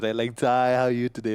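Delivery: put-on childlike cooing talk. Describing how people still greet him at twenty-eight, imitating talk to a little kid. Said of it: "that's how they talk to me".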